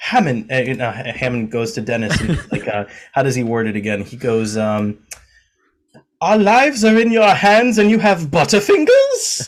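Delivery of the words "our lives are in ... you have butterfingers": high, loud, swooping put-on voice. Quoting Hammond's line to Dennis: Hammond impression. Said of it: "that was a terrible impression of Doctor Hammond".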